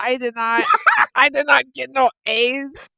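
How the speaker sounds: brief, high-pitched put-on Mexican accent. Storyteller quoting a man talking about his school grades, in a Mexican accent. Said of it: "he went to a Mexican accent for one second".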